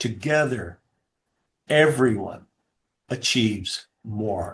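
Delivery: very slow, deliberate, each word drawn out. A speaker repeats a motto to an audience very slowly so it sinks in. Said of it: "I'm going to say it really slow again".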